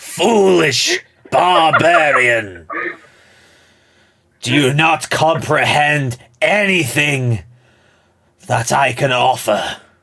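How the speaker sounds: booming, loud, high voice, drawn out slowly. Acting out the refusal he hears, in a Palpatine voice. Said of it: "that Palpatine voice".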